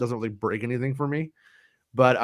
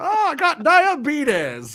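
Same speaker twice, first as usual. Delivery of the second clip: tipsy voice, very high-pitched, very drawn out; 5 dB louder than usual. Doing a drunk Wilford Brimley on the golf course: drunk Wilford Brimley voice. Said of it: "Wilford Brimley having too much to drink".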